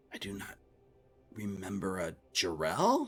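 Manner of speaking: bewildered undercommon voice, soft, slow, puzzled. Retelling how a fooled game character answered in his undercommon voice, acting out a confused reply. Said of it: "Really confused at the situation".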